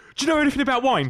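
frantic, panicked, very high shout. Speaker retelling a man outside their window shouting back at a car: retelling a panicked shout. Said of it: "This was in a panicked voice".

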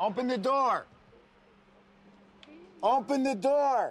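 very high, loud, drawn-out, repeated shouting. Someone at a car repeatedly tells the people inside to open the door, yelling. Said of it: "You're yelling".

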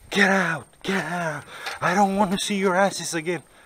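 mock-furious, crazed, acted-out rant. Retelling how a man on the train threw them out, mock-furious. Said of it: "This guy was like crazy hell".

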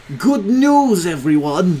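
put-on old professor voice, high and loud.

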